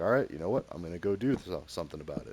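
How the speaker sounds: usual speaking voice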